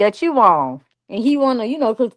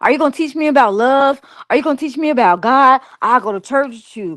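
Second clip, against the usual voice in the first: mock eager, thrilled, fast excited gushing chatter; 2 semitones higher than usual. Retelling what a guy kept asking her: imitating someone real excited. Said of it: "real excited".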